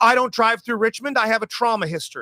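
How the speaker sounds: high, proclaiming voice for all to hear. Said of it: "and she proclaims it".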